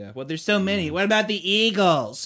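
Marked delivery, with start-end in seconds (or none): 0.9-2.3 put-on nerd voice, pitched high. Mocking plot-hole complaints while discussing a story's plot holes, in a nerdy voice. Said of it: "You say it like a nerd".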